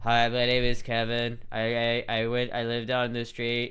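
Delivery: flat, droning monotone voice. Speaker imitating people who talk in a monotone, flat monotone voice. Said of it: "that monotone voice where it's just like".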